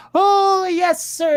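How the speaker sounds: very high, loud, stuffy put-on British accent. Complaining about the voice an unfunny man always does, in a stupid, stuffy British voice. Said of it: "that stupid, stuffy British voice".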